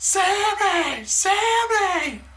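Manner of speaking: very high yell, name stretched long. The speaker re-enacts yelling at a woman just to be a shit: retelling a yell. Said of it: "I yelled at her".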